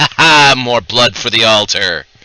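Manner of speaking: wizard voice, speaking through a smile. Voicing a wizard who smiles at the player: smiling wizard voice. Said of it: "smiles at you, and says".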